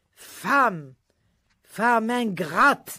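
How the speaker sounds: curt, sharp, scolding tone. Narrator voices his father rebuking the narrator's mother: curt rebuke. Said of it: "mon père descendait dans le jardin à deux heures du matin pour prendre son tour d'irrigation, / mon père descendait dans le jardin à deux heures du matin pour prendre son tour d'irrigation, / mon père".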